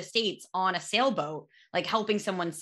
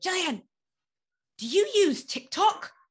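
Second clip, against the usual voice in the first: put-on British accent, pitched very high; 11 semitones higher than usual. Retelling what he asked Jillian this morning, in his British accent. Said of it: "he has a British accent".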